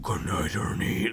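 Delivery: deep, gritty, disturbing demon voice. Retelling how a thing in the attic spoke again, in a deep, gritty, disturbing voice. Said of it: "in a really deep, gritty, disturbing voice".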